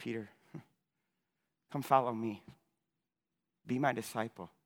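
soft, low, gentle tone.

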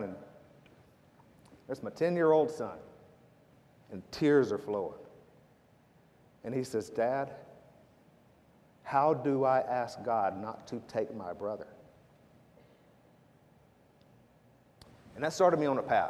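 voice choked with emotion. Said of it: "Sorry if I get a little watery-eyed".

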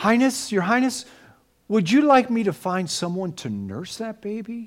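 mock, feigned innocent, eager, offhand tone. Retelling Miriam offering the princess a nurse: Miriam acting innocent. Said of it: "She had to act like she didn't know".

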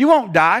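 Southern-sounding voice.

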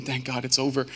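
ordinary delivery

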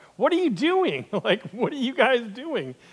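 high, furious, angry screaming. Speaker tells the church about a man who jumped in front of their car, retelling a man screaming. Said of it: "he's screaming".

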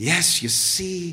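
brogue laid on thick. Retelling the uncle's tearful answer with a smile: imitating Uncle Seamus's thick brogue. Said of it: "in his thick brogue".

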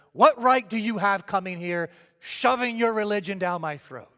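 put-on, loud hollering yell. Retelling how a house owner yelled at them at his door: imitating a man yelling. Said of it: "yelling at us".

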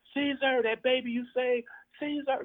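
mock, very high-pitched screaming outcry. Retelling how a woman screamed out to Caesar: imitating someone screaming out. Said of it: "She's screaming out".

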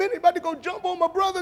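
very high, loud, tearful crying voice. Retelling a boy who ran off down the street, imitating him crying. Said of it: "And he's crying".

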